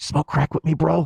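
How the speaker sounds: sweet, tender, loving voice. Retelling what someone says leaning in every morning: imitating April speaking tenderly. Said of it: "She leans in very tenderly".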